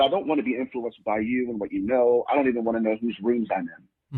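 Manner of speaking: ordinary talk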